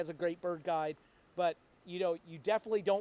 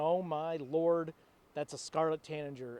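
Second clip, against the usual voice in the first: plain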